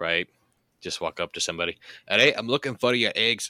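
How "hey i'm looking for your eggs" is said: put-on Scottish accent, higher and louder. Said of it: "had to learn a Scottish dialect".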